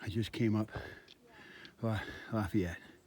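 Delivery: speaking while breathing hard, out of breath. Hiking on the trail, just up a climb: breathing hard. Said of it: "I'm breathing hard".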